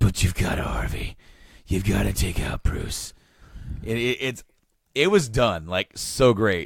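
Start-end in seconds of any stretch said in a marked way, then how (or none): 0.0-3.1 rough, gruff alternate voice. Retelling a scene, the speaker voices the alternate side in a gruff alternate voice. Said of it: "the kind of gruff alternate voice".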